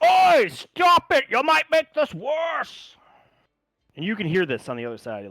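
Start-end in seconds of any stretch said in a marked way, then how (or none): 0.0-3.0 shrill, booming, very loud, slowly drawn dwarf bellow. Voicing a dwarf behind rocks who hears digging: dwarf shouting to stop. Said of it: "you hear the one dwarf go".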